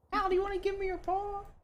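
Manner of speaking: very high, put-on, teasing, syrupy sweet voice. Teasing the partner by copying her nice voice to the dog Hal: mocking imitation of partner's nice voice. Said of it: "Why are you making fun of me?".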